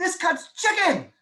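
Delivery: put-on, high-pitched, wholehearted excited enthusiasm. Recalling how they talked about it on appointments, acting out past enthusiasm. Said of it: "the way I talked with so much enthusiasm and conviction".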